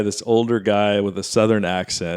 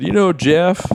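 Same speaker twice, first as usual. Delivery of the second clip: put-on Southern accent, pitched higher; 8 semitones higher than usual. Imitating an opposing lawyer with a Southern accent: Bill Clinton voice. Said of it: "I'll do my best impression".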